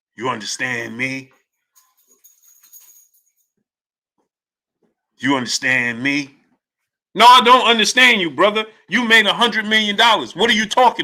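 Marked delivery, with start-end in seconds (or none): 0.2-6.4 deep, hushed, dropped monster-movie voice. Repeat another man's question, with your voice dropped like in a monster movie. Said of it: "Why his voice drop like he in a, a, a monster movie?".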